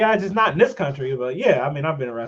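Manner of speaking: imitated casual, relaxed tone. Retelling how she answered about being arrested: imitating a casual tone. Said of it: "she just kinda says it, like, casually".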